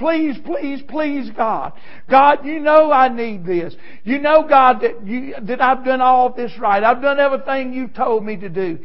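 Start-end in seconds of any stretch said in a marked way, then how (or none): 0.0-3.7 put-on desperate begging. A speaker acts out a person getting down and begging God; acting out begging. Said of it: "getting down begging".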